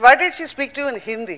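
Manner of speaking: ordinary talk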